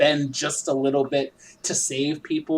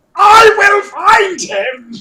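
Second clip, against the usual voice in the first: shrill, very high, very loud full-blast villain voice; 12 dB louder than usual. Recapping the story, host does a General Zod impression of his line. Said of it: "can I do my impersonation of that one".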